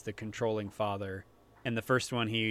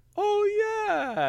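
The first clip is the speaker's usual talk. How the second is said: very high, loud, squealing vampire voice; 8 dB louder than usual. Retelling a movie scene as Dracula: Adam Sandler impression. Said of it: "spot on what Adam Sandler sounds like".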